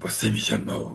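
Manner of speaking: put-on otherworldly spirit voice, rough and creaky. Retelling a story where an entity asks if it was called: put-on entity voice. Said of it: "Eu tenho até uma voz para fazer isso, que fala assim".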